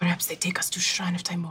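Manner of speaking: hushed whisper. Suggesting in character where they might be taken: whispering. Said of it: "I whisper this to Miss Prism".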